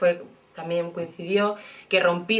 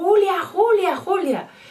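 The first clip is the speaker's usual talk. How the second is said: very high, loud, shouted call; 12 semitones higher, 6 dB louder than usual. Retelling a companion calling out from the group behind: imitating someone shouting a name. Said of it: "empezó a gritar mi nombre".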